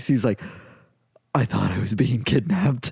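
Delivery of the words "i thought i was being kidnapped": mock quavering, shaky, trembling delivery. Retelling a startled customer's words: imitating a shaking voice. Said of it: "voice shaking".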